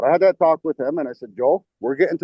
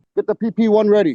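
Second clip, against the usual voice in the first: pitched-up yell; 7 semitones higher, 4 dB louder than usual. Retelling an order given during a game: imitating own yell. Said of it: "I yelled at Lovelas".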